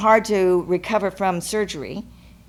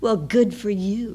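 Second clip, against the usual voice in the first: mock sneer, full of contempt. Retelling the speaker's dad replying to hearing the speaker felt loved, imitating Dad's sneer. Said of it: "he sneers and he says".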